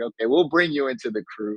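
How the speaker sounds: ordinary delivery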